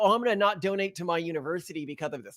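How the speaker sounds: normal talking voice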